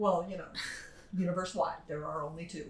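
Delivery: dry sarcastic tone. Answering a remark about alien genders in a book discussion: sarcastic. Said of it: "I am being sarcastic".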